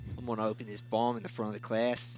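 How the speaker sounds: really bad fake Australian accent. Giving a character a voice for the group, really bad Australian accent. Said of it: "or really bad Australian".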